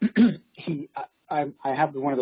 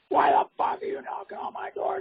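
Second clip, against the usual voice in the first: mock furious male screaming, heated but contained. Retelling how an angry neighbor came out: imitating a man screaming. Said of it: "he starts screaming".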